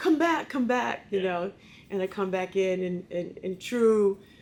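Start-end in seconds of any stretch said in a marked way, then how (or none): 0.0-1.1 put-on high shouted yell. Retelling someone yelling out the restaurant door after him, retelling a yell. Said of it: "someone yells out the door".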